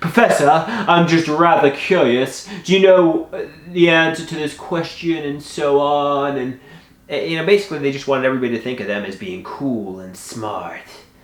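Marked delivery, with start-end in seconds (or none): 0.0-5.2 fawning ingratiating voice, pitched up. Imitating a classmate asking the professor a known question: imitating a suck-up student. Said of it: "ask questions they obviously knew the answer to".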